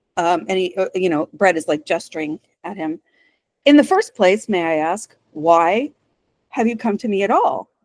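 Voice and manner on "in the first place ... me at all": normal talking voice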